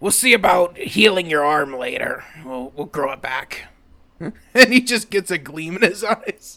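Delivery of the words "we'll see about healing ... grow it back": dry, scratchy, pushed-out rasp. Voicing a character in a tabletop game, speaking to a wounded party member; rasping voice. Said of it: "His voice is a little scratchy from, ... He rasps out".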